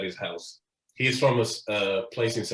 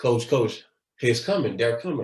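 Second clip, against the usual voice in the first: usual speaking voice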